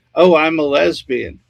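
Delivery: open, unabashed, forthright tone. Retelling what a neighbor would say in a bar: imitating someone raising her voice. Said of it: "she would just raise her voice and say".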